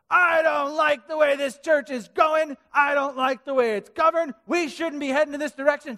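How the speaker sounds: loud high-pitched shouting. Retelling a woman at a church meeting at the microphone: imitating someone shouting. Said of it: "she starts shouting".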